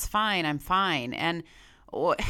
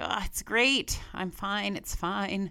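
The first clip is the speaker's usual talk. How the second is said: put-on sarcastic tone, laughing it off. Retelling past replies to a best friend about dating: imitating own sarcastic reply. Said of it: "sarcastically say".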